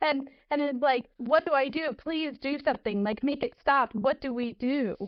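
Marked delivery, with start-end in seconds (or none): 1.2-5.0 desperate, imploring, begging plea. Recounting how she turns to her leader for help, acting out begging. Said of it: "not screaming, but like begging".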